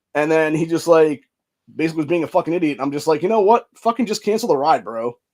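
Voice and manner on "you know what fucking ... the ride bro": fed-up, furious angry outburst with raised pitch. Retelling what he told a driver who drove past him, retelling angry words. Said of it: "that's how pissed I was".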